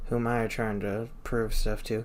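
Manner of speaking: normal talking voice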